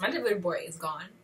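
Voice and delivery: normal talking voice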